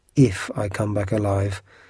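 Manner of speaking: ordinary delivery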